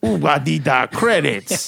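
sluggish, creaky, rough crime-boss or creature voice, drawn out. Joking that a taco chain sounds like a Star Wars villain: Jabba-type character voice. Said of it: "a little Jabba type character".

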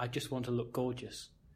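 low-volume, hushed, close, soft, under-the-breath voice. Retelling what she said, close up to the face: imitating a hushed voice. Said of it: "in quite a hushed tone of voice".

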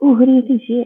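mock eager, excited, high little voice. Retelling a little girl pointing at a portrait: imitating a girl's spark of excitement. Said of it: "with a little spark of excitement".

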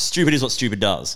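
ordinary delivery

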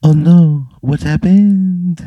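put-on French accent, very high, very slow, drawn-out. Voicing Patrick in a role-play story: Patrick's French voice. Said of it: "Patrick's French voice".

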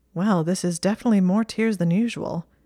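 plain reading voice

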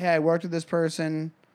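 plain

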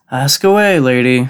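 sighing in annoyance. James answers a woman questioning him, sighing in annoyance. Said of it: "James sighed, closing his eyes in annoyance".

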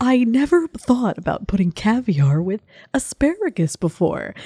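put-on woman's voice. Asked to do the lady from NPR: impression of an NPR lady. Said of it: "do your impression of that lady from NPR".

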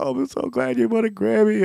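play-acted very high, tearful crying voice. Retelling what people at the grocery store said: imitating someone crying. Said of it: "would start crying, like".

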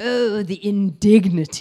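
put-on haughty, superior, sanctimonious, self-righteous voice. Parent describing Thomas the Tank Engine's Gordon: mock-sanctimonious Gordon voice. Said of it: "in the voice of Gordon from Thomas the Tank Engine ... he is just so sanctimonious".

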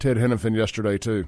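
normal talking voice

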